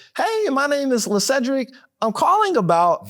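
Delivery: uncertain upward inflection, rising on about. Demonstrating how an unsure caller sounds on the phone, unsure rising uptone. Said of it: "and that's a uptone".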